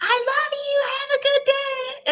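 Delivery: mock very high, stretched-out screaming. Retelling Leah calling to the girls on the school drive: imitating Leah screaming. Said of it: "Leah was screaming at the girlses".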